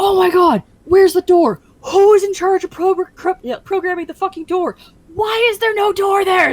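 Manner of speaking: very high, loud, frantic, stumbling, panicked yelling. Retelling developers running around looking for a missing door: imitating panicked screaming. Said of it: "a bunch of devs run around screaming".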